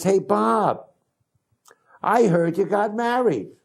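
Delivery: put-on thick North Jersey accent, very high-pitched. Retelling a Sunday phone call from Rose to Bob: Rose's strong North Jersey accent. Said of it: "a North Jersey accent, uh, very strong though".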